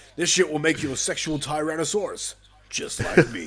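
belted out high. Quoting a favorite line from the movie: Jesse Ventura as Blaine voice. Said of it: "Jesse Ventura's Blaine".

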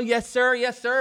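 slow, polite, proper, all-business professional voice. Retelling a job interview after cussing out the driver: imitating own professional voice. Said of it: "I'm sounding all professional".

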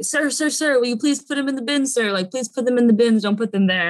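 mock worked-up, high, rushed, agitated insistence. Retelling a man who came out while they dropped things off, mimicking his excitement. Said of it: "he was kind of just getting excited".

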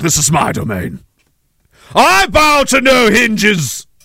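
swooping, regal, declaiming delivery. Holding forth until a partner asks about it, in King Henry voice. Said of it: "Are you talking like King Henry again?".

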